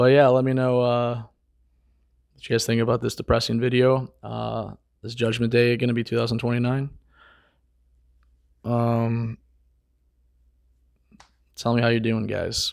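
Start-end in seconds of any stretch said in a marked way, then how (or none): 5.0-12.7 dull, flat, bored monotone drone. Signing off a video to viewers, in a bored monotone. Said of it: "Sorry for the monotone".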